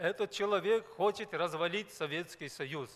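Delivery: ordinary talk, nothing marked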